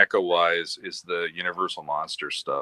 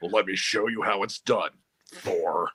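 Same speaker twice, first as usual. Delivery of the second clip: put-on robot leader voice. Playing Optimus taking over the role, telling Chris to step aside: Optimus Prime voice. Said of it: "hired [name] to do the voice of Optimus".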